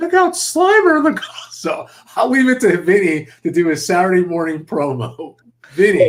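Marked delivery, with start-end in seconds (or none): 0.0-1.0 very high, put-on cartoon announcer voice. Recalling a Saturday morning cartoon voice: Vinny-like really high voice. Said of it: "like this really high voice".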